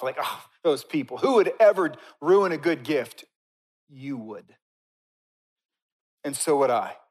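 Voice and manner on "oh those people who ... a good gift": high, loud scoff. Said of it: "We all scoff".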